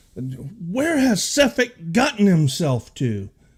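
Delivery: shrieking, high-pitched yelling scream. Game master voices Torga in the market, screaming at her men. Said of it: "screaming at her men".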